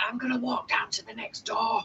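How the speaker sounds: soft, hushed half-whisper. Half-whispering a plan to another character who cannot be messaged: half-whispering in character. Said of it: "I'm gonna whisper".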